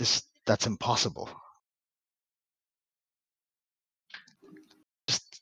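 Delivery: soft, breathy, hushed whisper. Narrating a scene, voice a man who has just recognized someone, whispering. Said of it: "he whispers like".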